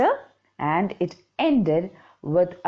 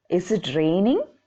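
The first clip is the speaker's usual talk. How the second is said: raining said with rising questioning tune. Showing learners how to read a question aloud: questioning intonation. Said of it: "Listen to me when I am reading".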